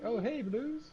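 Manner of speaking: put-on cheerful-style children's show mailman character voice. Imitating a postman from Blue's Clues for another speaker: Blue's Clues postman voice. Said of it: "with the postman, ... and he's like".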